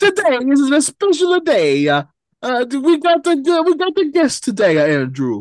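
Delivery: put-on Italian accent. Opening the show beside a co-host, in a put-on italian accent. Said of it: "I'm going to do this Italian".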